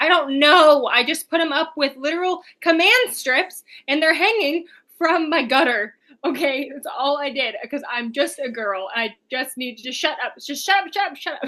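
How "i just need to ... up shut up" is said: put-on panicked rambling. Retelling talking to a man at a store, the speaker acts out panicked rambling. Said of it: "And so I was like panicking".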